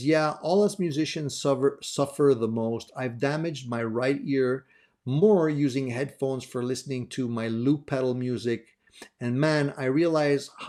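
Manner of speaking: ordinary delivery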